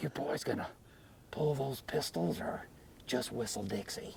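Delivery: very quiet, barely voiced, whispered taunt. Doing an impression for a riding partner: Clint Eastwood voice. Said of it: "let me get my Clint Eastwood going here".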